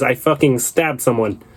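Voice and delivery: hostile, aggressive, threatening delivery. Retelling what a driver said after being asked why he's going to jail: imitating an aggressive tone. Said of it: "He says it that aggressively".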